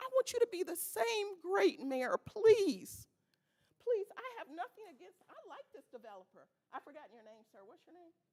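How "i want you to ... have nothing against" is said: heartfelt, high, emotional begging tone. Addressing the mayor at a meeting, in emotional pleading. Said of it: "I am just so emotional".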